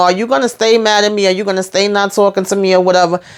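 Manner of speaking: usual speaking voice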